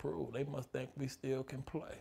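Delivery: very hushed, very quiet whispered aside. Retelling what the man beside the speaker whispered during a standing ovation: retelling a whisper. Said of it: "he whispers".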